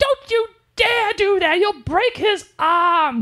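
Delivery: put-on very high-pitched little-girl British accent. Recapping a scene, quoting her line in a little girl British accent. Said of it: "You like you like my little girl British accent?".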